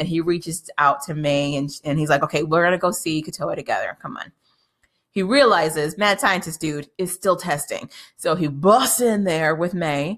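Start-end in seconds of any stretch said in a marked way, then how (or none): none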